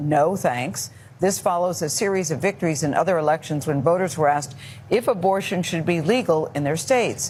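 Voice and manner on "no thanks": ordinary talk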